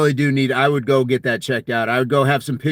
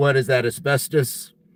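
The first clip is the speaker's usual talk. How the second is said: usual speaking voice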